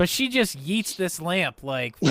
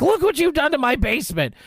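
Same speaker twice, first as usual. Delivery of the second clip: mock old woman yelling, higher and louder; 10 semitones higher, 4 dB louder than usual. Retelling a movie scene where the grandma yells at the boy: imitating grandma yelling. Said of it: "the grandma just starts yelling at him".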